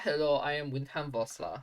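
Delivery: generic put-on European accent. Introducing the character Windham Vossler in a generic European accent. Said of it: "always go to a Russian accent?".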